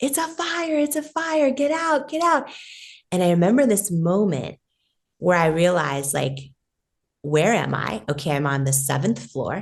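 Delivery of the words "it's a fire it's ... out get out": shrill, high-pitched screaming. Retelling what the front desk person screamed on the phone, imitating someone screaming. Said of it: "answers the phone screaming".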